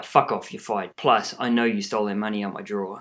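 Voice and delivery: ordinary talk, nothing marked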